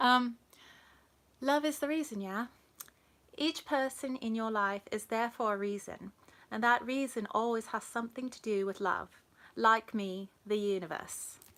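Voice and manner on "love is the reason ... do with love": put-on British accent held throughout. Performing a line when asked to try an accent, british accent. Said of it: "British accent".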